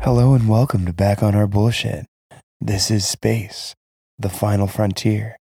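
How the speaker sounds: put-on sultry, seductive, sexy voice. Opening the podcast intro in a sexy voice. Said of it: "in my sexy voice".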